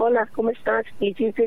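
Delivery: put-on Latin American accent.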